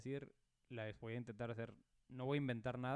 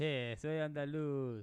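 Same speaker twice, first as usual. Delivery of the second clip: fake Argentine accent, louder; 3 semitones higher, 5 dB louder than usual. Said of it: "estás mezclando como argentino".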